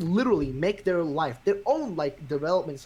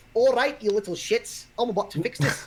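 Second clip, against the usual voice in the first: put-on pitched-up Scottish accent; 5 semitones higher than usual. Retelling how Nintendo's top boss stepped in, as Iwata in a Scottish accent. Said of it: "I don't know why I did a Scottish accent".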